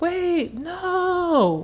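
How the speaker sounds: shouted.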